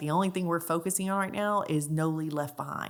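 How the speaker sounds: ordinary delivery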